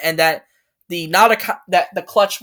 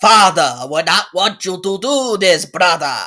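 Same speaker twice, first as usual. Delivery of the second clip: measured English with a Japanese accent; 4 dB louder than usual. Demonstrating the character's originally planned voice: Wu's Japanese accent. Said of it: "Wu's Japanese accent".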